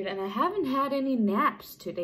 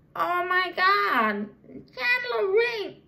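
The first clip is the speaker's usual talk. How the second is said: very high, loud, drawn-out exclamation; 10 semitones higher, 5 dB louder than usual. Trying the impression again after calling the last one bad: Janice from Friends voice. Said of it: "No, that was bad".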